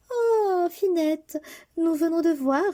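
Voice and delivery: very high, haughty, gushing voice. Narrator tells of the sisters coming home from the ball, voicing the elder sister. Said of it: "lui disait-elle, / et quand ses sœurs arrivaient".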